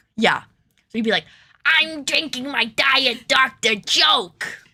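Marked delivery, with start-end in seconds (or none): 1.7-4.5 high, slow, eerie, drawn-out creepy villain voice. Retelling a friend's joke during a photo shoot: imitating a Joker impression. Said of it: "Peter just is continually doing Joker bits".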